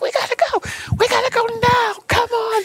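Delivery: very high, stretched-out, frantic hollering. Telling how a friend yelled at Tabby in the locker room: retelling a friend's yell. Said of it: "She's yelling at Tabby".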